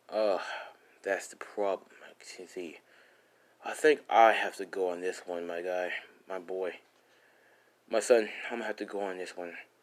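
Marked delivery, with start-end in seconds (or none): none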